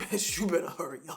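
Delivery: dog character voice. Voicing the impatient dog waiting for a walk: voicing the dog. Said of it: "He's like".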